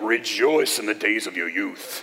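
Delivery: terrible low rousing battle speech, barely Scottish accent. Reading a verse that sounds like a Braveheart speech: bad Braveheart impression. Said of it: "That was a terrible Braveheart impression".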